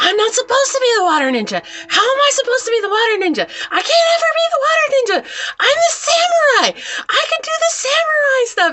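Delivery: play-acted very high, shrill, furious screamed rant. Retelling a story, the speaker acts out a girl who kicked the bucket, imitating her screaming. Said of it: "And she's screaming".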